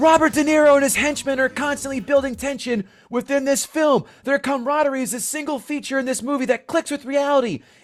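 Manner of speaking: loud, high-pitched reading. Reading an all-caps five-star Amazon review aloud in a loud, raised voice. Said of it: "It's all in caps. This is why I'm going to, to raise my voice".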